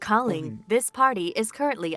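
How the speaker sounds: robotic, automated voicemail recording voice. Showing others the voice done on a friend, automated phone message voice. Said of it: "start calls like that just to freak people out".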